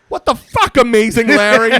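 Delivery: very high, very loud, shrill, drawn-out yell. Retelling a movie scene where he yells at someone: imitating Pee-wee yelling. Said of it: "he's yelling at him going".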